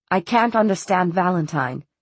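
plain

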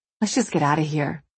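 ordinary delivery, nothing marked

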